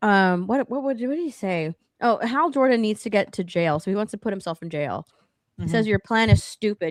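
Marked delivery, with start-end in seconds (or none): 5.9-6.9 put-on condescending tone. Retelling what a character said to Hal Jordan: imitating a condescending tone.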